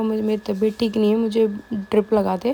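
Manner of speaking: usual speaking voice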